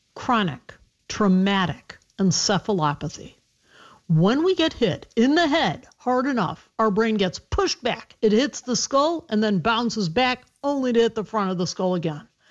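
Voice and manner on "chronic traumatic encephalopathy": slow, deliberate, each syllable drawn out with care. A physician answering an interviewer, naming a medical term: saying it slowly. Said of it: "Let me say it slowly".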